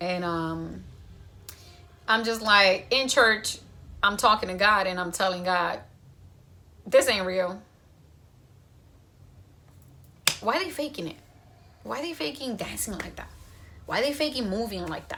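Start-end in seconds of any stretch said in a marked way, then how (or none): 6.9-15.2 mock sarcastic remark, quieter. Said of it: "Very sarcastic".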